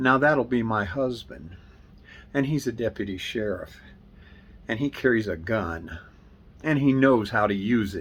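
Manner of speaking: ordinary talk, nothing marked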